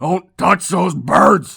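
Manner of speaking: put-on very loud, slow, high cranky old man bark. Retelling a cranky great-grandfather's outburst: imitating grandpa barking. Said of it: "he just barked at me".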